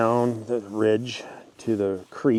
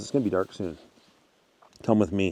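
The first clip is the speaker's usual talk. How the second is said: ordinary talk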